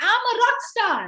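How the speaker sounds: slow, heartfelt delivery, sounding truly meant. Showing a group how to say an affirmation: with conviction. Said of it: "Say it like you mean it".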